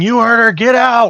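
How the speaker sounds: shrill, very high, loud shout. Voicing a character who hops on a table and orders everyone out: in-character shouting. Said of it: "begin shouting".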